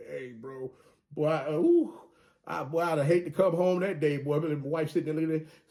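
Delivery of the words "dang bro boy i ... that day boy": joking, sarcastic put-on tone, slow and playful. Joking about a coach's hire and acting out a reaction: playful put-on sarcasm. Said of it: "I'm being sarcastic with what I'm saying".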